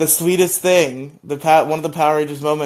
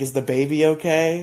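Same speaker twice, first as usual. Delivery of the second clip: put-on slow, tearful, sobbing crying voice. Retelling a scene where Nadira asks about the baby, imitating crying. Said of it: "Nadira's just, like, crying. She's like".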